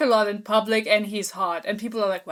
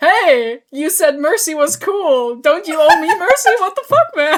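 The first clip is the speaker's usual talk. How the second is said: raised shout climbing higher in pitch; 7 semitones higher, 8 dB louder than usual. Retelling a character calling after two people running away: imitating him shouting. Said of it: "he's just shouting after her".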